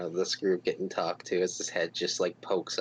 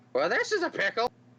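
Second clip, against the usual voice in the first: put-on very high old man voice. Voicing a stall keeper in a crowd: old man voice. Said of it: "old man voice speaks out".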